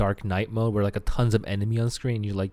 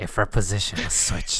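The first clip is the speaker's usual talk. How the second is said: nasal, lower-pitched character voice; 2 semitones lower than usual. Quoting an iconic game line after being told to sound nasally, nasal Dante voice. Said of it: "Make your voice a bit more nasally".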